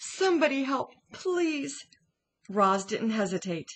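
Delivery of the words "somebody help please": high, pleading, begging cry. A mother hare points at the burning lodge, crying out, pleading. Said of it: "cried a mother hare".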